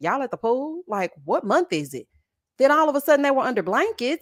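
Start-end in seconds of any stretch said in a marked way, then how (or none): none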